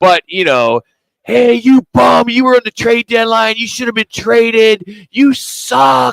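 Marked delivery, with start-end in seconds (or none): 1.2-6.1 put-on, high, screaming, taunting heckler voice. Retelling how a fan heckled the goaltender: imitating a fan yelling and screaming. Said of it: "And he's yelling and screaming".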